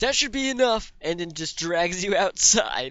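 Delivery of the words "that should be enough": shrill, very high-pitched shouting. Narrator voicing a woman who cuts off a coin pouch, drops it, yelling.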